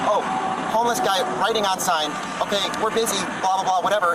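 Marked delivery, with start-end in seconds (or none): none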